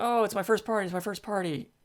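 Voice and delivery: gushing, high and excited. Retelling a party story with Eeyore and Roo, the speaker does an excited Roo voice. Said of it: "Roo's very excited".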